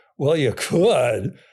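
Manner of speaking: mock patronizing, condescending, dismissive voice. Quoting a woman's reply with her exact intonation, mock-condescending quoted reply. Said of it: "quote unquote, exact intonation ... Like only an idiot would".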